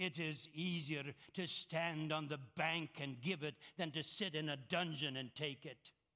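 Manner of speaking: put-on rough-edged, gravelly German accent. Recalling the last bible study a man taught, quoting him in a gravelly german accent. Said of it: "he had this gravelly German brogue voice when he said".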